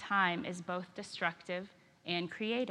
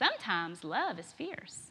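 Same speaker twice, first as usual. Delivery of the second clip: put-on sweet Carolina accent. Quoting a best friend who acted as a colleague, sweet Carolina accent. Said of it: "in her sweet Carolina accent".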